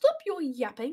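loud, thick, strong put-on British accent. Telling another player to stop talking: strong british accent. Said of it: "That was a strong British accent".

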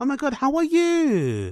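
very high, swooping, sing-song receptionist voice. The speaker shows how front-of-house and HR women greet people, imitating their voice. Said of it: "they have this type of voice".

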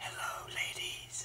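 mock-seductive quiet voice. Talking to the camera in a quiet mood, in a put-on sexy quiet voice. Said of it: "Don't I sound so sexy when I'm quiet?".

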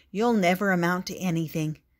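ordinary delivery

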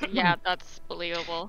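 low, soft, dry deadpan with no reaction. As Riva, responding to another character's story, Riva deadpanning. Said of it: "Riva just kind of deadpans and goes".

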